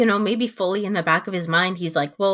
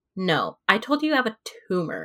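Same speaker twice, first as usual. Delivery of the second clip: play-acted deadpan, stone-cold, matter-of-fact, pitch swinging; 3 dB quieter than usual. Recapping a show, speaker quotes a character's reply to another: imitating deadpan delivery. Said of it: "Juliet's just straight up deadpan".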